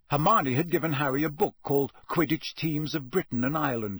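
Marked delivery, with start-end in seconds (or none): none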